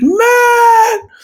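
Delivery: high, loud, carrying yell. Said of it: "I could probably yell out my deck".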